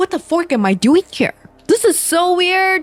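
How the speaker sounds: put-on speaking through a laugh, very high pitch. Retelling a movie scene where she snaps out of it: imitating someone laughing while talking. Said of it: "she laughs".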